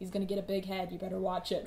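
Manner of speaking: usual speaking voice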